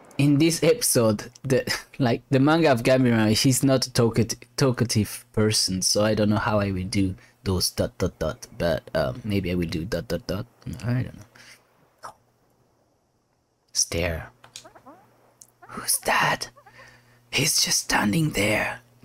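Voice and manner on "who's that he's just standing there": high, slow whisper. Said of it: "Why are you whispering?".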